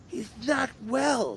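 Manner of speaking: put-on very high, heartfelt, solemn, sentimental, drunken tone. Retelling how Grandpa leans into the speaker's wife: imitating Grandpa turning serious, sentimental. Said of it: "he gets like serious and sentimental".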